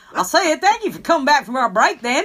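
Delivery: attempted rural accent. Welcoming listeners back from the break in an attempted country accent. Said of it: "It was supposed to be, like, country".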